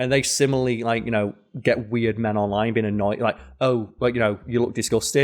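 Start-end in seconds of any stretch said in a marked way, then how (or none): none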